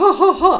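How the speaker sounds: high, loud full-on belly laugh. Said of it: "like, full on, like, chest".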